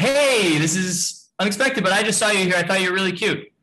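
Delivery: rushed, fast, high-pitched, heady chatter. Speaker demonstrating approaching a woman too hastily, talking fast, high tonality. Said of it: "not only am I talking fast, but my tonality is high".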